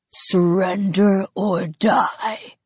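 rough, grinding, grating, harsh alien voice. Reading a story, the narrator voices an alien that has spotted him: deep, grating alien voice. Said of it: "the alien says, in a deep, grating voice".

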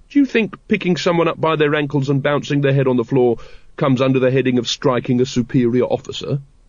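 usual speaking voice

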